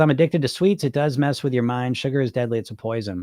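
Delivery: plain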